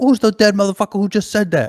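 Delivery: angry high-pitched tone. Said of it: "He was like".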